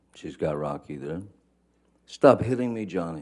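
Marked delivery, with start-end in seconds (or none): 2.1-3.3 mock upset, frantic, high-pitched, freaked-out screaming. Retelling what she screamed from the couch: imitating a high-pitched, freaked-out scream. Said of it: "she's screaming in, in her best, um, freaked out, upset voice, high-pitched".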